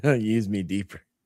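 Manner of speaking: put-on voice made to sound gross. Retelling a player's request to a coach, quoted to sound gross. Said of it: "Why did you say it like that then, weirdo?".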